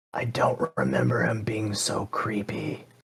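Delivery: very quiet, hushed, close whisper. Leaning over to a companion in character and whispering to them: whisper. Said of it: "lean over to Echo and whisper".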